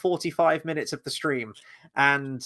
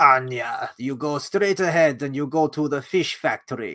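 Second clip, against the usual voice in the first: put-on old woman character voice. Recalling a line from the woman who runs the orphanage: imitating the Anastasia orphanage keeper. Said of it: "the one who runs the orphanage. And she's like".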